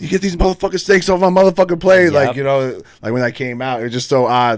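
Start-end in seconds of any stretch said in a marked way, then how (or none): 0.0-2.1 mock high, fast, enraged, furious scream. Recalling screaming in the theater when the film came out, retelling a scream. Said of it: "screaming like".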